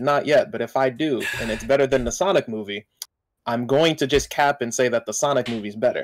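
plain

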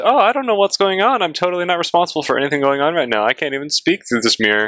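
put-on clueless, blameless innocence. Suggesting what a prisoner should pretend to say: mock feigned innocence. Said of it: "he should pretend".

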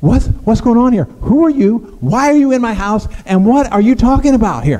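put-on alarmed, flustered tone. Retelling Mary's reaction when an angel appears in her house: imitating Mary freaking out. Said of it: "she is freaking out".

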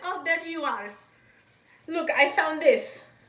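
put-on rough Russian accent. Retelling how a woman pulling clothes tracked the speaker down, rough Russian accent. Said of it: "she had like that rough russian accent".

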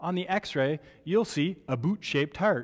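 put-on, true-sounding Canadian accent. Lecturer teaching tetralogy of Fallot, putting on a Canadian accent. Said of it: "my one chance to sound like a true Canadian".

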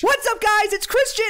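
put-on very high, loud children's channel host voice. Demonstrating sounding like a YouTuber for children, in a kids' YouTuber voice. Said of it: "I sound like one of those YouTubers".

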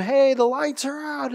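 play-acted, badly done, high child's scream. Recalling the speaker's kids when the lights went out, imitating kids screaming.

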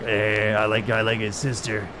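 sleazy, skeevy, creepy put-on voice, laid on thick. Reading a viewer comment aloud in a skeevy creepy voice. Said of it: "read it in the most skeeviest voice you can think of".

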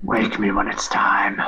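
hushed whisper. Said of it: "just whispers".

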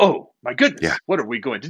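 put-on dramatic delivery with long pauses. Describing how William Shatner talks, the speaker imitates him: William Shatner dramatic pausing. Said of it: "He kind of pauses and says".

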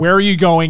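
normal talking voice

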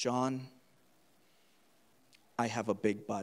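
slow, hushed stage whisper, close in the ear. Retelling what the Lord said in prayer: retelling a half-whisper. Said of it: "he whispered in my ear".

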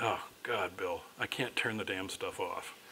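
flat, expressionless tone. Retelling a doctor's reply to an excited man, retelling a deadpan reply. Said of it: "in this just deadpan way".

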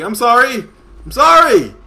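high, loud panicked cry.

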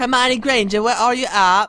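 terrible fake British accent, high and loud. Calling out for someone while looking for a way inside, bad british accent. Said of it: "Probably the worst British accent I've ever done in my life".

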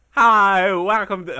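very loud, high, grating, annoying youtuber voice. Mocking a Minecraft mod reviewer's intro to someone, imitate his annoying voice. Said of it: "he has this annoying fucking voice".

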